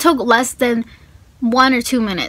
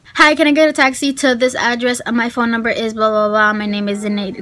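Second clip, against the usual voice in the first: normal talking voice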